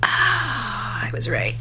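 whispered softly.

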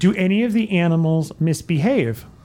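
normal talking voice

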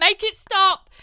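mock shrill, very high, very loud scolding. Speaker recalls her mum telling her and her dad off; imitating mum telling off. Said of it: "she was like telling me and my dad off".

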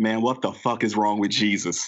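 put-on mutter under breath. Speaker retells his older brother woken early on Easter, retelling a mumble under breath. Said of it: "my brother mumbles under his breath".

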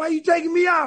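angry, aggrieved, indignant tone with high pitch. Retelling a player coming to the sideline after being taken out, imitating him mad. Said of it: "And he was mad".

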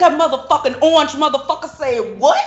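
high-pitched, taunting, ranting voice. Joking about threats toward South Korea: imitating Kim Jong-un talking trash. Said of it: "And he was like".

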